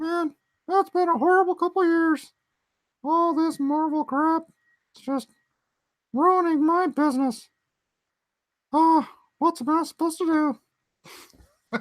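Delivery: pitched way up, cartoon style. Showing a planned puppet video line in a South Park Mickey voice. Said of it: "Mickey from South Park".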